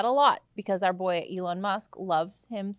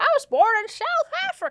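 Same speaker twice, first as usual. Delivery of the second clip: put-on Southern accent, pitched very high, swooping; 7 dB louder than usual. Saying where someone was born in a put-on southern accent. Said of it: "we're doing, like, a southern accent".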